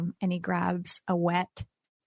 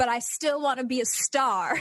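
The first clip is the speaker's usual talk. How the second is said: put-on drunken yelling, higher; 6 semitones higher than usual. Retelling a drunken night of self-pity, imitating own drunken yelling. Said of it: "just got drunk and just started yelling".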